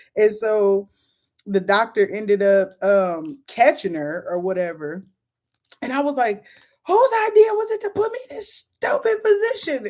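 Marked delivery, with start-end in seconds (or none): 6.9-9.9 put-on very high pained yelling. Retelling yelling during childbirth: imitating her own yelling in pain. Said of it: "I'm just yelling anything 'cause it hurts".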